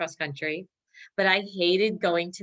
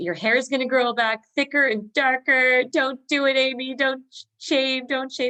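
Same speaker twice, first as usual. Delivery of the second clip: high-pitched, loud, scolding scream; 7 semitones higher, 5 dB louder than usual. Retelling a mother banging on the bathroom door: imitating a mother screaming. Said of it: "screaming at me".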